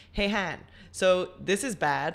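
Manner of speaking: ordinary talk, nothing marked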